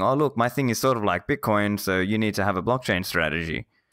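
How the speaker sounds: ordinary delivery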